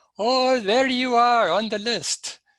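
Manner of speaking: high-pitched, loud, excited. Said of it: "he excitedly exclaimed".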